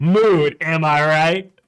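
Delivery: put-on slow, awkward grown-up voice straining to sound young. Mocking a card's text as an older adult: imitating an out-of-touch older adult. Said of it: "every time I'm gonna be like".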